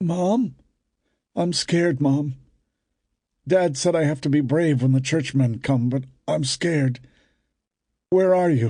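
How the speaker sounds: unsteady, uncertain, quavering, wavering voice. Reading a scene where a frightened man calls for his mother: uncertain wavering voice. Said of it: "in a wavering voice".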